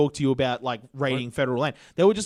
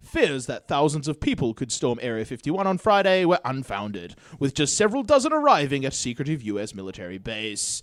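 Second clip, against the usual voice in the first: mocking, stuffy broadcast newsreader voice, swooping. Reading a news article aloud the way it's supposed to be read: mocking BBC news-reading voice. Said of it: "that's how you're supposed to read this".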